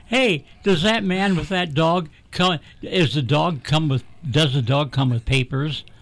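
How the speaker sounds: ordinary talk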